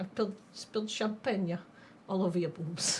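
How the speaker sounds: breathy, whispered celebrity-style voice. Doing a line from an SNL sketch as a Christopher Walken impression. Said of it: "which which Christopher Walken do I want to do?".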